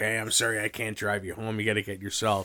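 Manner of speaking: put-on, slightly drunk, tipsy voice. Imagining a shy guest's host after seven beers: imitating Pat a little drunk. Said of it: "he was a little drunk and he's like".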